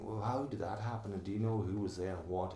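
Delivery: normal talking voice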